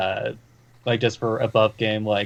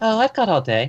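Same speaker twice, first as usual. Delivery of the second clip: very high-pitched put-on woman's voice; 11 semitones higher, 3 dB louder than usual. Switching characters mid role-play, in a woman's voice. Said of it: "This time in a woman's voice".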